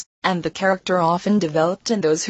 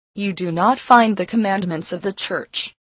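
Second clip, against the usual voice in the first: ordinary delivery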